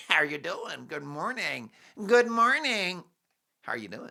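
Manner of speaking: put-on friendly, cheery, mock-upbeat Californian voice. Comparing California and England, the speaker mimics Californians greeting each other: cheery Californian impression. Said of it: "There's no one grumpy in California".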